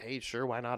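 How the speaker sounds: ordinary delivery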